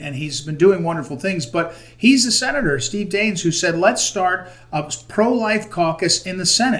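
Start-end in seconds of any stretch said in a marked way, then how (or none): none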